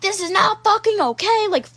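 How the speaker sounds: put-on high, angry, freaked-out outburst. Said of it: "freaking out on me".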